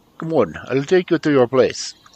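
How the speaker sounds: put-on heavy Eastern European accent. Reading a story aloud, redoing a character's line: broad Eastern European accent. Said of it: "make his voice sound that way".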